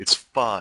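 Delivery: slightly passive-aggressive tone. Deliberately adding a passive-aggressive twinge to the voice. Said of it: "a little passive aggressive twinge to the voice".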